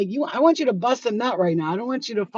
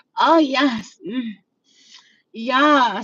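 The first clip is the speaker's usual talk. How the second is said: very slow, loud, drawn-out faked pleasure moans; 3 semitones higher, 5 dB louder than usual. Mocking a partner who fakes it to look pretty: imitating a woman faking pleasure. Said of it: "if she's coming like this".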